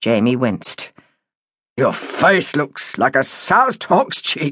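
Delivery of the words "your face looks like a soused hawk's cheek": slow, reproachful voice mixed with disgust. A family member reacting to a man's ruined face, reproach and disgust. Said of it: "with a mixture of reproach and disgust".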